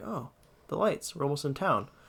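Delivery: soft, hushed half-whisper, half to herself. Retelling a ghost story, a passenger looking at the town lights: imitating someone half-whispering. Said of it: "whispers to herself".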